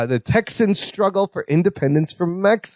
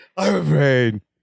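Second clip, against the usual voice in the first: mock crying while speaking, lower; 3 semitones lower than usual. Retelling a character who is afraid and crying: imitating crying. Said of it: "and he's crying".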